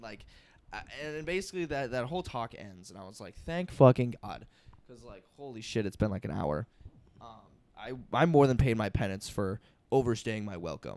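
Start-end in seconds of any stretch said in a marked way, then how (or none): none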